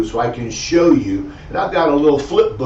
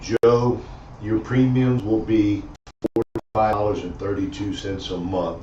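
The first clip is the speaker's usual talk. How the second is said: dull, unexcited, low, flat monotone; 4 semitones lower, 4 dB quieter than usual. Example of quoting monthly premiums to a client: flat monotone, no excitement. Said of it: "if you got a monotone voice".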